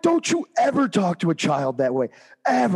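mock, high-pitched yell. Retelling scolding someone for how they spoke to a child, retelling a yell. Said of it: "And I'm yelling this the whole rig could hear".

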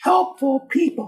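high, rising, swooping put-on sing-song voice. Mid-talk to listeners, dropping into a mock high-pitched voice. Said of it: "Did I use too high of a pitched voice".

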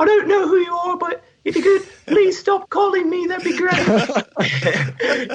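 put-on Irish accent with the voice lifted way up. Retelling how Ashley answered an unknown caller, imitating Ashley's Irish accent. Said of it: "she actually said it in like her Irish accent".

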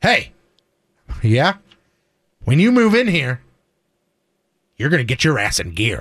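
put-on dead serious voice. Retelling a father's warning about moving in: imitating dad, dead serious. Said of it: "he was being dead serious".

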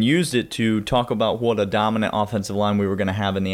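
ordinary talk

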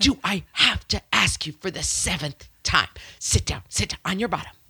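hushed, hissing voice under the breath. Showing the not-yelling way of telling someone to sit down, hissing. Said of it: "Like that kind of like hiss".

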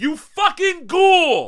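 mock shrill, very high, swooping loud scream. Retelling how a cranky record store owner yelled at a customer: imitating someone screaming. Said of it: "literally screaming at the guy".

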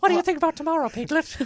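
cartoon voice, very high, loud and rapid. Voicing Pooh talking to Piglet, the speaker slips into a Piglet voice. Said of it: "I did Piglet's voice as Pooh".

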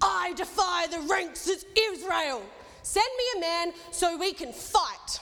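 big, booming, loud, high giant's yell. Storyteller tells of David arriving at the battle and hearing a voice, Goliath yelling. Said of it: "I didn't want to yell that into the mic".

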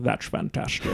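breathy, whispered movie-star voice. Retelling a dream of doing a podcast: Sean Connery voice. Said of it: "I did the whole podcast in a Sean Connery voice".

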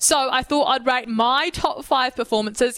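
my stressed in a slowed line. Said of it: "emphasis on the my".

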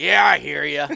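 very loud, grumbly cartoon voice at full volume. Retelling what a passing hunter answered: grumbly Papa Smurf voice. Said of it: "like all grumbly, like Papa Smurf".

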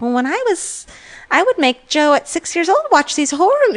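mock New Jersey accent. Retelling what a podcaster's mother said, Jersey accent as Joe DeRosa's mom. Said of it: "like Jersey-ish accent. She's like".

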